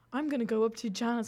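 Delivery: put-on casual, relaxed Irish accent. Retelling a party skit where Rob spoke in an Irish accent: imitating Rob's Irish accent. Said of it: "Rob was speaking in, like, this Irish accent".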